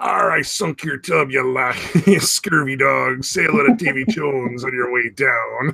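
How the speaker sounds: swashbuckling pirate captain voice. Describing sinking other players' boats, taunting them in a pirate voice. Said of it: "talking like a pirate".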